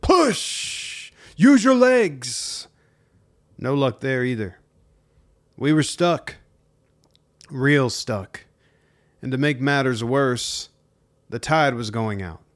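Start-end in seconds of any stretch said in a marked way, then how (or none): 0.0-2.7 put-on very high, very slow, shrill drill sergeant yell. Retelling pushing a stuck boat with everyone, retelling a drill-sergeant yell. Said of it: "I yelled like a drill sergeant".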